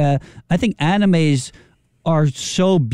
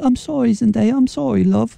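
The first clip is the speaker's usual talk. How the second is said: meek, timid British mouse voice, high and creaky; 7 semitones higher than usual. Joking about a couple's imagined fights: timid British mouse voice. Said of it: "like this little British mouse".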